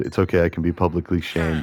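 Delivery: ordinary talk, nothing marked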